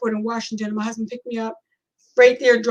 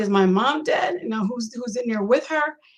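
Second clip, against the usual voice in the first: ordinary talk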